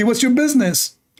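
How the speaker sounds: put-on Saudi Arabic accent. Retelling someone's retort in a story, in a Saudi Arabic accent. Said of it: "in Saudi accent".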